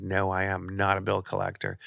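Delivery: ordinary talk, nothing marked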